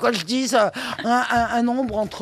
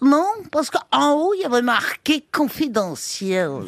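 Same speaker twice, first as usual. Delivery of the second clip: put-on Belgian French accent; 3 semitones higher than usual. Telling a joke about a Belgian boss and secretary, the secretary answers in a Belgian accent. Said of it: "l'accent belge".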